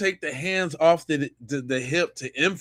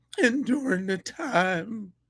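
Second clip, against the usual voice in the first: mock choked-up voice, quieter; 4 semitones higher, 4 dB quieter than usual. Retelling someone's overdone emotional delivery, in a mock choked-up voice. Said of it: "if he ain't landed on super extra thick".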